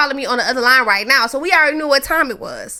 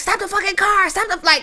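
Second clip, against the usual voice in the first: screaming, higher pitch; 7 semitones higher than usual. Retelling cussing someone out over the phone while following his car: imitating her own screaming. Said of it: "screaming out of my mind".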